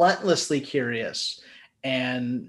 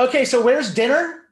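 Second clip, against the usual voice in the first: mock, very high, loud, shrill, carrying outdoor voice; 9 semitones higher, 5 dB louder than usual. Retelling a woman behind them after a screening, imitating her loud non-indoor voice. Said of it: "not in an indoor voice".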